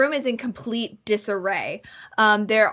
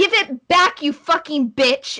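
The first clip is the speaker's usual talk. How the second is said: high, furious, angry shouting; 5 semitones higher, 4 dB louder than usual. Voicing a girl fighting over a book with her sister: shouting. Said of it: "the girl in green is shouting".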